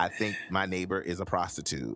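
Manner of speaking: ordinary talk, nothing marked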